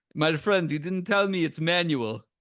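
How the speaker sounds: put-on Russian accent. Retelling what the Russian guy who moves cars said, in a Russian accent impression. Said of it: "I'm gonna do a Russian impression".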